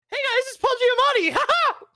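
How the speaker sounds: very high-pitched squeaky voice-changer style voice. Joking that the actor really talks like the robot: high Paul Giamatti voice. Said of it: "Unless he's talking like that".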